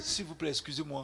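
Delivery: put-on small, tiny, quiet voice. Retelling how he addressed the man who sold him his bus pass, in a small voice. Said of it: "Avec une petite voix".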